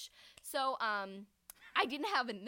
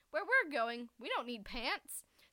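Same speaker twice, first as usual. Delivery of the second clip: ordinary talk, nothing marked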